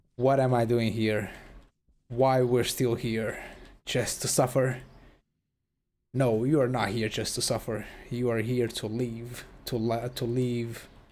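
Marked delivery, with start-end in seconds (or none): none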